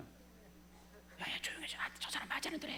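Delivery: hushed, soft, hissed whisper.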